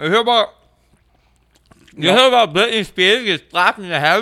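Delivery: talking with mouth full. Asking another speaker about a news story, talking with mouth full. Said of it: "We do the rest of the podcast in our mouthful".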